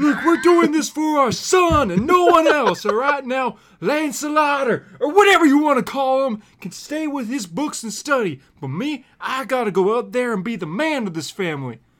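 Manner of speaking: loud, worn, raspy voice, pitched very high. Mid-performance, the speaker says his voice now sounds like a raspy John Marston voice. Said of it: "My voice was getting raspy. It's like John Marston now".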